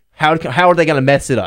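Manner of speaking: usual speaking voice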